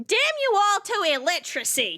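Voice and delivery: swooping, high-pitched delivery. Voicing a character cursing the whole party: voicing Betty cursing. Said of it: "she goes".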